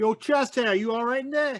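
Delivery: high-pitched yell in character voice. Calling out in character to someone behind the bar: character yelling out. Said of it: "I'm gonna yell out".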